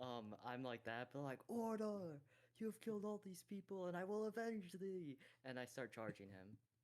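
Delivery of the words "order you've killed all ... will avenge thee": very high, all-out, vengeful, top-of-lungs yell. Playing a character charging a foe: yelling at the top of voice. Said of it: "yell at the top of voice".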